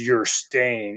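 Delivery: deep demonic male voice. Retelling a voice that answered in a clip, deep demonic male voice. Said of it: "like almost like a demonic type voice".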